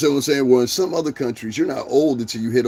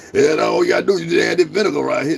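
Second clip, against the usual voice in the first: put-on country farmer voice, higher pitch; 3 semitones higher, 3 dB louder than usual. Imitating David Justice, said to sound like a chitlin farmer. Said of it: "That's how he was talking".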